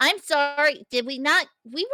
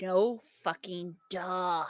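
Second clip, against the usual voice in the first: low, soft, grumbled mutter under the breath; 4 semitones lower, 7 dB quieter than usual. Voicing Haley reacting to a warning: muttering under her breath. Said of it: "Haley just mutters under her breath".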